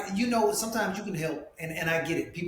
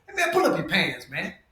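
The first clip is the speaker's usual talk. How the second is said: firm, stern, fatherly voice; 3 dB louder than usual. Retelling how Clayton English talks in dad mode, Clayton English's dad voice. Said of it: "he had to have the dad voice".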